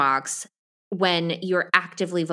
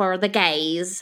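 bad, terrible put-on Southern American accent. Retelling a story about a romance novelist in a terrible Southern accent. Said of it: "That was a terrible Southern accent".

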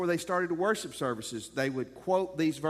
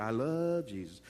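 put-on, over-the-top, exaggerated pious, churchy tone; 6 semitones lower, 4 dB quieter than usual. Imitating how people say they love Jesus: mock-pious exaggerated voice. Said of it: "they always say it in a funny way because, you know, they're being spiritual".

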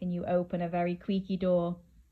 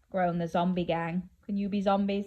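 plain

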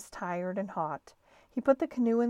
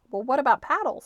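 matter-of-fact, businesslike, raised and pitched up; 5 semitones higher, 5 dB louder than usual. Reading a story, the narrator voices a character asking a storekeeper, in a businesslike voice. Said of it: "making his voice sound businesslike".

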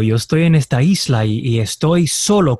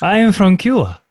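exotic, foreign-sounding, pitched-up voice; 6 semitones higher than usual. Answering the caller who remarked on the voice: exotic-sounding voice. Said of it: "you have an exotic sound to your, uh, to your voice".

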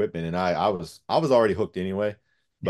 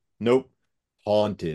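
long, stretched, drawn-out spirit box voice. Retelling what the spirit box answered: imitating a long deep voice. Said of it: "like, really long and, and deep".

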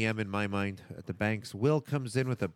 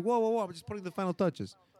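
put-on New York Queens accent; 8 semitones higher than usual. Speaker acts out a guy caught on his car replying, in a Queens accent. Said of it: "I don't know why I said it like that. The final touches, like the guys from Queens".

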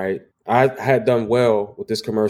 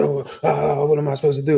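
play-acted, high, helpless, flustered, frantic panic; 5 semitones higher than usual. Retelling how the other person reacted to a burning mower: imitating someone panicking. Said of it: "like, panicking".

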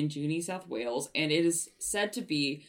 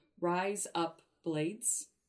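put-on Australian accent with rising tune on razor; 5 dB quieter than usual. Showing how to say razor blades with an Australian accent. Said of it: "so I know how to say razor blades as like with an Australian accent".

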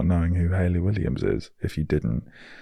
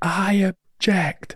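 shouting in Scottish accent; 14 semitones higher than usual. Imagining bursting out an objection at a wedding: Shrek-style Scottish shout. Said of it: "In a Scottish accent as well".

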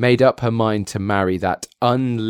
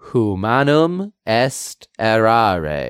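put-on poor Latin in a French accent, R's swallowed. Repeating how a man said a Latin phrase, in French-accented Latin. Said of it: "pronouncing the Latin words with a French accent".

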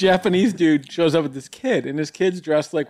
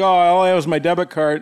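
ordinary delivery

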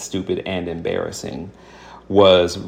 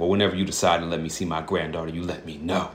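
pointed, snide, passive-aggressive tone; 7 dB quieter than usual. Acting out a text about being let to see a granddaughter: mock passive-aggressive tone. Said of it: "this real passive aggressive text ... that's what I'm going to say it like".

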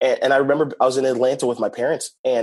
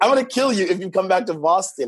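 put-on exaggerated Haitian accent, much higher; 6 semitones higher than usual. Retelling what your mom from Haiti told you, imitating mom's crazy Haitian accent. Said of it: "So she got a crazy accent".

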